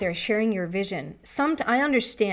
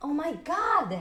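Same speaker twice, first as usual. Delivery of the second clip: sudden high, loud yell; 7 semitones higher than usual. Talking about getting help from helpful people, then yelling. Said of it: "Sorry for yelling".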